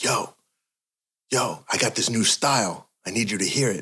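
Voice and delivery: mock, super excited, bursting, hyped-up. Retelling a friend's phone call about a new style: imitating someone super excited. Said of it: "super excited and he's like".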